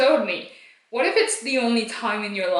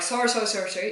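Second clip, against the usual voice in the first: mock frantic rapid speech, much faster; 4 dB quieter than usual. Retelling their own reaction to the man with the boat, retelling frantic apologizing. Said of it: "still apologizing a billion times per minute".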